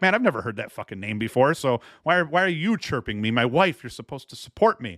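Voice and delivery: ordinary delivery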